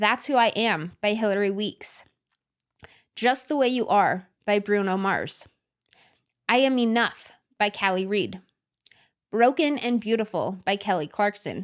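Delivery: unhurried pace, each phrase set apart with pauses.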